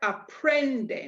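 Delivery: extra stress on the pren of aprenden. Pronunciation lesson on aprenden, stress on pren in aprenden. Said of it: "an extra stress, an extra emphasis, an extra oomph, an extra sound on the pren".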